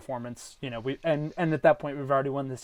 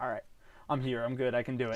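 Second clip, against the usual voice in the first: fed-up, exasperated voice; 4 dB quieter than usual. Imagining a hitter rounding the bases after a home run: imitating an exasperated Austin Wells. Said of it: "an exasperated kind of".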